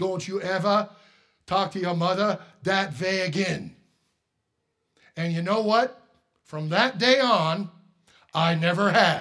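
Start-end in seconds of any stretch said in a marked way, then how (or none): 0.0-3.7 put-on German accent. Telling a church audience what his dad said, in a german accent. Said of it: "In his German accent".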